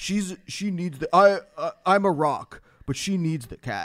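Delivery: bro-y, tough-guy voice. Reading an ex's message aloud as a bro-y protector: bro-y protector voice. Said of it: "that's a good voice".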